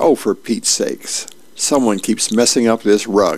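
plain

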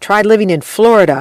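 usual speaking voice

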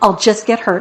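usual speaking voice

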